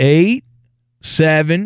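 speaking very slowly, deliberately drawn out. Show host giving the call-in number for those who can't remember it, talking very slow. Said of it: "I'm going to talk very slow".

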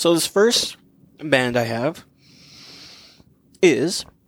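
talking with mouth full while chewing. Kicking off the group's topic on bands, mouth full and chewing. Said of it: "I'm chewing this jelly bean".

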